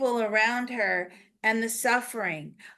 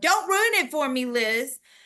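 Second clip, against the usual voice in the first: high-pitched, loud shout; 3 semitones higher than usual. Retelling what a woman shouted at the speaker, imitating someone shouting. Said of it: "she's now shouting at me".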